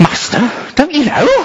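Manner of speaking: through gritted teeth. Imagining what he would have said in Peter's place, mock gritted-teeth delivery. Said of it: "through gritted teeth".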